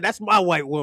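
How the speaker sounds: play-acted, defiant, bold, declaring tone. Retelling a cousin's words to a girlfriend's father: imitating cousin's defiant declaration. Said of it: "He was like".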